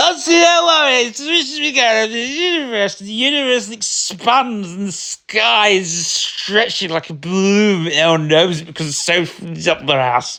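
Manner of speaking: put-on sloppy drunk slurring. Retelling drunk rants that annoyed a sister: imitating own drunk voice. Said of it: "that's me drunk".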